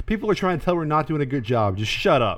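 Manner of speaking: ordinary talk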